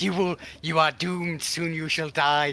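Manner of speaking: loud, bellowed shouting in a put-on voice. Playing a character backing away and threatening the enemy: shouting threats as Emrys. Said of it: "Emrys is just kind of shouting".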